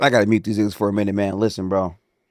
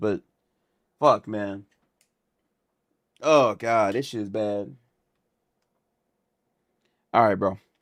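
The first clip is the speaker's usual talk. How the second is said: crying while talking; 5 dB quieter than usual. A streamer talking to his chat about the stream, tearful. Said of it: "why you crying?".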